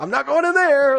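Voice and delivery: very high, squealing, squeamish, mock horrified.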